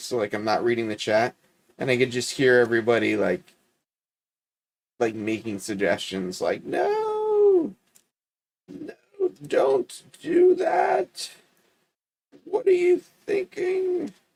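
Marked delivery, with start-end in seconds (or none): 6.6-14.1 very high, very slow, drawn-out nagging tone. Recalling the chat's suggestions while not reading it, impression of the chat. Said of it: "That was my vocal impression of the chat".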